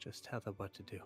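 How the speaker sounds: hushed whisper. Voicing a character who leans in to a friend: whispering. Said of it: "whisper into your, into your ears".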